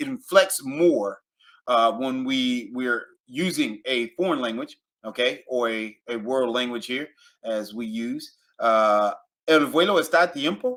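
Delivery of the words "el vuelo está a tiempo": tiempo lifted upward at the end. Spanish example sentence asked as a question: rise at end on tiempo. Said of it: "Let it rise at the top".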